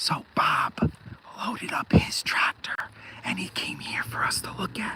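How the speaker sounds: soft, hushed, barely audible whisper. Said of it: "I'm gonna whisper".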